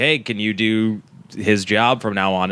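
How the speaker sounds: ordinary delivery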